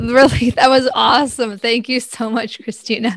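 speech mixed with laughter. Thanking the previous speaker after her funny talk, laughing while talking. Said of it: "I'm laughing so hard".

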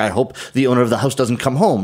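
plain

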